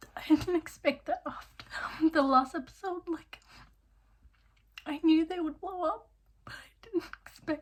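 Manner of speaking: tearful voice, talking through tears. Reacting to the latest episode of a show, crying. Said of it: "Sorry, I'm crying".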